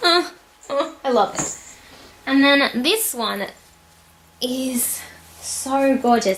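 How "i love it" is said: contented, happy sigh of delight. Describing a bag the speaker loves, happy sigh. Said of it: "*sighs happily*".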